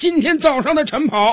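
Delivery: very high, loud, barking drill sergeant voice. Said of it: "训练军是接下来又继续说道".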